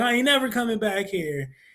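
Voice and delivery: put-on crying kid's voice. Retelling leaving a friend's house on a bike after a fight: imitating a crying kid. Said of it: "get on your bike right away crying".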